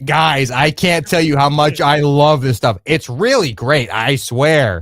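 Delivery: loud, exaggerated, over-the-top, insincere enthusiasm. Acting out a fake lotion endorsement to the camera: over-the-top endorsement. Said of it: "say it in such like an over the top way".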